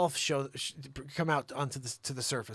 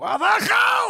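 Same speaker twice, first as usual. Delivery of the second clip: very high, loud scream, climbing upward in pitch; 14 dB louder than usual. Speaker reenacts his old catchphrase the way a Russian would say it: retelling a scream, low to high. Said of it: "And I'd start low and scream up".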